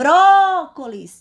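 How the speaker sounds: strong stress on first syllable bró of brócolis. Explaining syllable stress, the speaker calls out the word with stress on bró. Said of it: "a sílaba mais forte, mais intensa é a sílaba bró".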